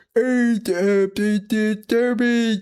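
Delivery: very high, silly, dumb squealing voice. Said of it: "stupid voice when they're playing games".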